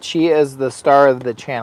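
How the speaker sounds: ordinary delivery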